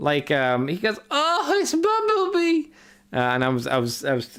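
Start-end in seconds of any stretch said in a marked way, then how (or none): 1.1-2.7 mock swooning, ecstatic starstruck squeal, very high. Speaker mocking how a fan reacts on first seeing a celebrity, imitating an ecstatic fan. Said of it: "he cooms when he sees Bumblebee".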